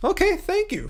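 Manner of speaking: excited high voice. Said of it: "My voice got all high there 'cause I'm all excited".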